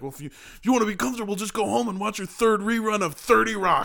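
put-on, high-pitched yelling. Retelling what the speaker yelled at their mom and grandma, re-enacting a yell. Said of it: "And I yelled at them like".

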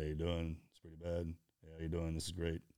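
low, flat deadpan, unchanging stoic tone. Imitating guys whose faces never change no matter what: imitating a stoic unchanging tone. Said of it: "This is their voice inflection or the tone".

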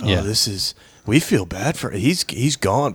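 preachy, self-important, sanctimonious tone. Mocking two TV hosts talking about it on their show; imitating Joe and Mika's hushed tones. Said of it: "in the hushed tones".

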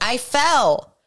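sudden, loud, high yell. Retelling a grandmother suddenly calling out from behind: imitating grandma yelling. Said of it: "and she yells".

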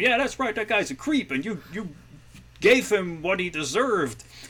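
very high, supportive cheering voice. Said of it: "her friends, like, supporting him".

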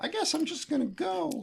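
very high, hammy, overacted weepy crying voice. Retelling how old man Stillwell cries to himself in the hospital: imitating Stillwell crying. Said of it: "old man Stillwell here cries to himself".

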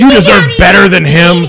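mock drunk woman voice. Describing drunk women's bathroom talk, imitating drunk bathroom talk. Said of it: "drunk women's fucking bathroom talk".

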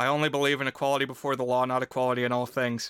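low, dead-level, even monotone drone. Retelling a scene where Thaddeus Stevens is pressed before journalists, very monotone. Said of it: "just very monotone, he says".

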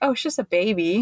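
put-on dry, sarcastic, downplaying understatement. Retelling the dad's remark about a huge shark: imitating a sarcastic remark. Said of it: "he was being sarcastic".

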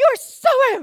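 put-on, very loud, high, sharp snapping retort. Retelling how one child snapped at the other, retelling a snapping retort. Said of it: "just snaps at her".

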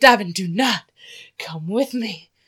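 put-on dramatic Southern belle voice. Retelling telling a friend not to come along, mock-dramatic southern belle. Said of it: "All dramatic and like I was like a Southern belle".

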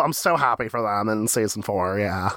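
sarcastic tone.

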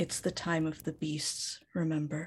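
very quiet whisper. A player's character steps forward and whispers to Beery, very quietly. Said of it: "whispers very quietly to Beery".

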